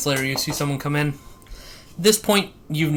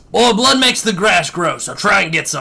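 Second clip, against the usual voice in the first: put-on screaming voice, higher and louder; 4 semitones higher, 6 dB louder than usual. Describing a game quartermaster who screams after poor shooting: Quartermaster Payne's scream. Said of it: "he just screams".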